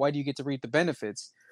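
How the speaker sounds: ordinary delivery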